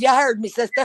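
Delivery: ordinary talk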